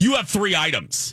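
put-on harsh, aggressive voice, very high-pitched. Retelling what a gate agent said at check-in: imitating an aggressive gate agent. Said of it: "He was very aggressive".

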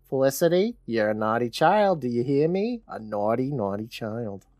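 put-on New Jersey accent. Recapping a film scene, voicing a recording: Zelda Rubinstein voice with New Jersey accent. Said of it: "why is Zelda Rubinstein from New Jersey".

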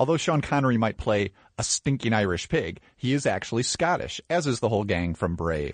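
ordinary talk

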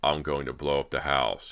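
ordinary delivery

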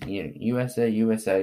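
ordinary delivery

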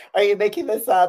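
put-on crying voice. Retelling the moment the nomination news arrived: imitating own past crying. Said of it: "'Cause I'm already crying".

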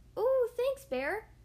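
small, high, squeaking little woodland critter voice. Reading the story aloud, the narrator voices Squirrel speaking to Bear, squeaky Squirrel voice. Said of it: "squeaked Squirrel".

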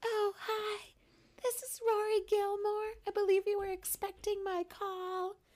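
very high, breathy put-on voice. Retelling a character answering the phone: imitating a breathy voice. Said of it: "Not so breathy".

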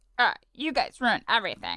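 playful cartoon voice with widely swinging pitch. Asked to give a character impression, doing an LSP impression. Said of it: "give me an impression of a character? ... I chose LSP".

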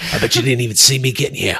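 low, fast, quiet tough-guy talk. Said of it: "He's like".

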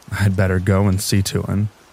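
plain reading voice

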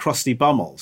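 ordinary talk, nothing marked

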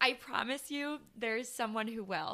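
heartfelt, emotional, moved voice. Talking to listeners about breakups, getting emotional. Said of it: "I'm like getting emotional just like saying this".

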